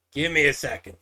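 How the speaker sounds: gravelly, harsh voice. Narrating, voicing someone inside a barn answering a knock, gruff voice. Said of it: "you hear like a gruff voice answer".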